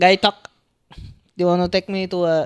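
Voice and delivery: Thai accent impression. Taking turns doing accents on request: Thai accent impression. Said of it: "go Thai".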